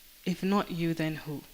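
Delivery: plain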